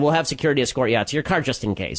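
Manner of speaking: ordinary delivery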